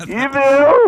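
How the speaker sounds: very high, loud, drawn-out cry. Asked for a couple of words, doing the Mermaid Man voice. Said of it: "There it is".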